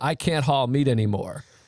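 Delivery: mock-despairing voice. Retelling a movie scene where a man breaks down as Rocky is about to hit him. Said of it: "And then he's breaking down".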